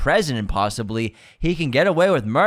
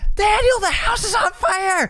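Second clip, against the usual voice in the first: mock full-out scream, pitched very high. Retelling a film scene where a character screams: imitating a scream. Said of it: "Then he screams".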